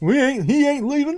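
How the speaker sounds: squeezed-out, bad, very high voice. Reacting to a news story about a dolphin in Venice: Hank Hill voice. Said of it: "I'm probably not good with that impression".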